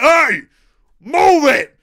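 pretend shouting. Acting out shouting at another player to move: pretend yelling. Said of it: "Some hairy motherfuckers just shouted".

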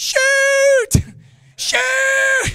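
shrill, all-out, very loud, high-pitched yelling. Recounting what someone's mom and dad were yelling, retelling a yell. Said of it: "his mom and dad are yelling".

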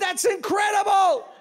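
very high, loud, excited shouted exclamation. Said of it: "Capital letters".

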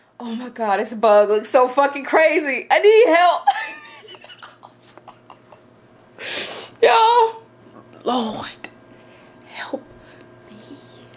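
freaked out. Speaker tells viewers she can't bring herself to kill a bug; freaked out. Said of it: "Why is this bug freaking me out?".

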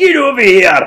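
very loud, high-pitched Scottish roar. Speaker shows how Scorpion would sound if Scottish: Scottish Scorpion impression. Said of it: "if Scorpion was Scottish".

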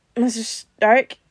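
put-on slurred, slurring words. Narrator reads Peter calling out to Mr. Stark as he comes around, slurred. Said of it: "Peter slurred".

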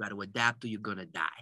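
put-on heavy, broad New York accent. Retelling what a retail chain owner said: thick New York accent. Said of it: "He had this thick New York accent".

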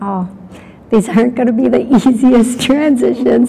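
laughing, can't keep a straight face while speaking. Passing on to the listener what he is saying about transitions, laughing while speaking. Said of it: "I am sorry that I'm laughing at that".

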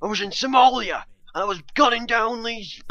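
bad put-on rough English accent, very high. Attempting a voice like Ross Kemp's: bad Ross Kemp impression. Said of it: "That was a really terrible Ross Kemp accent".

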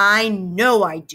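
angry cry, crying out angrily. A girl who just stamped her foot answers the narrator: cried out angrily. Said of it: "Sheila cried".

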